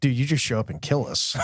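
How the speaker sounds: normal talking voice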